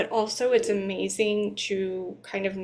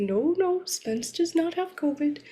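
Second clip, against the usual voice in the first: put-on high, extremely authoritative, reassuring tone; 8 semitones higher than usual. Quoting her husband's voice memo about Spence, imitating an extremely authoritative tone. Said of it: "extremely authoritative".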